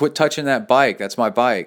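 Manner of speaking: acted loud, angry yell. Retelling how the speaker yelled at a woman moving the bike: retelling a yell. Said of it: "I yelled at her".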